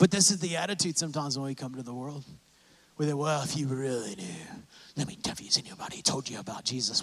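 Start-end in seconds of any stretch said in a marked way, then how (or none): 5.0-7.0 mock arrogant, holier-than-thou, hushed, breathy preachy voice. Speaker acts out how believers sometimes come across to the world, mock-arrogant preachy voice. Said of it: "in such an arrogant".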